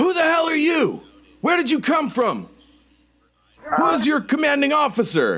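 very high, wild, swooping furious scream. Voicing a rifle-holding officer confronting strangers: screaming angrily. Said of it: "and she screams".

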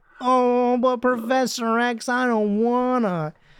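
high, drawn-out whine, very slow. Mocking how a hero might complain to Professor X: whiny Cyclops voice. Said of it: "He just doesn't sound like he's like".

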